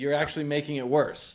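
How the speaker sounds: usual speaking voice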